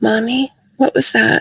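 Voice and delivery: audible stage whisper. Retelling what a daughter asked in the tent: imitating a half-whisper. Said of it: "And in a whisper".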